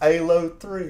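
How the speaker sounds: very loud put-on British accent, H of Halo dropped. Speaker retells how someone said it, in a British accent dropping the H. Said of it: "doing like British impressions ... saying it like that without the H".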